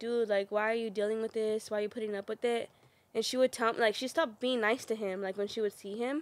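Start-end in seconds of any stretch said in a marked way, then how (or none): none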